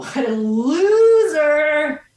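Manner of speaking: taunting cackle. Voicing a skater who cackles at a fallen player: cackling taunt. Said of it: "and you hear cackling".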